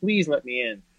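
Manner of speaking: put-on earnest, pleading, begging voice. Retelling begging people to let them into a program: imitating own past pleading. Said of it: "begging and pleading with these people".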